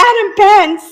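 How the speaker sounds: acted, very high, shrill, shouty yell. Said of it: "Shouty capital letters".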